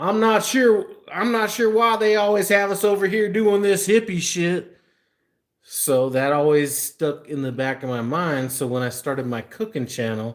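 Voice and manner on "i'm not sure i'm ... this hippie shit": put-on high, small-town country accent. Retelling what he would always say when told to do this stuff, in his little country accent. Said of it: "in his little country accent".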